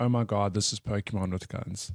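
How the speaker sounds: normal talking voice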